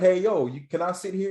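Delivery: slight Louisiana drawl on the words. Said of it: "in this little Louisiana accent".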